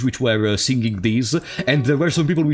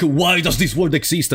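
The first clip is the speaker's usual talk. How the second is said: usual speaking voice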